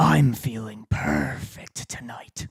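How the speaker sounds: soft, catlike, catty voice with a little growl. Asked for a cat line, the speaker delivers one with a little growl. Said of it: "little growl in there".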